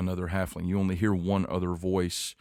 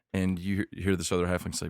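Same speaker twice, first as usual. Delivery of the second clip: normal talking voice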